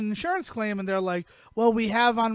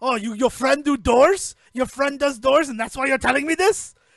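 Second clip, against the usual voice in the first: loud, put-on shopkeeper character accent; 3 semitones higher, 6 dB louder than usual. Retelling a movie scene as the shop owner: imitating a shop owner's accent. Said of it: "what a great time for you to do accents".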